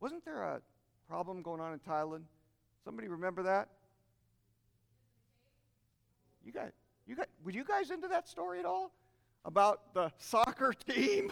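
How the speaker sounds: playful, swooping, facetious feigned ignorance. Asking the audience about the Thailand cave story, facetious. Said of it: "I'm being facetious".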